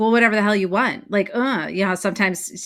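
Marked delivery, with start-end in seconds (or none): 0.0-1.1 dismissive brush-off tone, couldn't care less. Showing how the book title could sound: dismissive tone.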